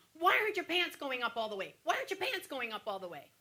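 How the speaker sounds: repeated mild half-yell with swooping pitch. Retelling a nurse putting the speaker's pants on in bed: imitating the nurse yelling. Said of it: "she starts yelling at me".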